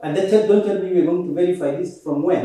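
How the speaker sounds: usual speaking voice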